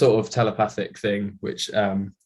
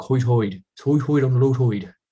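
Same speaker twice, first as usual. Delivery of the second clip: Isle of Wight accent with hoid sounds; 3 semitones higher, 3 dB louder than usual. Showing another speaker how the accent sounds: Isle of Wight accent. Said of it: "Isle of Wight accents like that".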